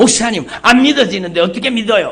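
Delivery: high, loud, angry voice.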